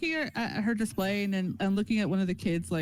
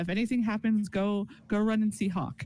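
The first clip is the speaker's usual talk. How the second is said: ordinary talk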